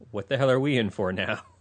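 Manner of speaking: ordinary talk, nothing marked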